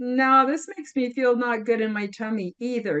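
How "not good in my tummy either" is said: ordinary talk, nothing marked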